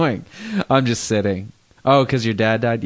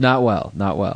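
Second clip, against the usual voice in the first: usual speaking voice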